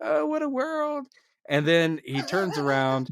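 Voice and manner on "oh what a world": very high voice, as if melting. Retelling a scene where a character fakes melting: Wicked Witch melting voice. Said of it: "like the Wicked Witch".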